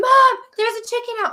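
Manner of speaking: put-on child voice, high yelling. Retelling how Sydney yelled to her mom about an escaped chicken: imitating Sydney yelling. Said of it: "Sydney's like yelling".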